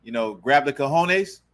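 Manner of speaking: ordinary delivery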